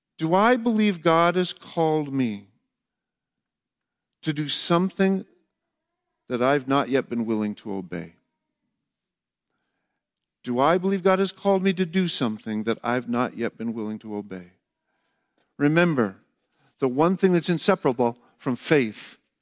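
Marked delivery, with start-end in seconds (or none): 0.2-14.5 very slow, deliberate, weighted reading. Closing a talk, the speaker reads questions for listeners to ponder, very slowly. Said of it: "I'm going to read them very slowly".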